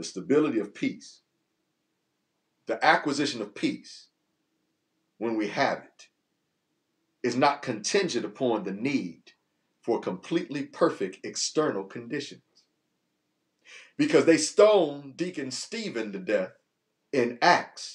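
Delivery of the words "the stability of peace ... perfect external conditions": very slow, deliberate delivery, each word weighed. Speaker sharing a spiritual message with listeners, saying it slowly. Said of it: "I'm going to say it slow".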